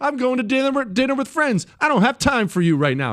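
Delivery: mock cheerful offhand brush-off. Retelling a phone call where their mom blew them off, imitating her lighthearted tone. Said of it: "in a lighthearted way".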